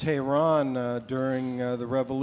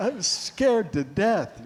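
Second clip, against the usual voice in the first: usual speaking voice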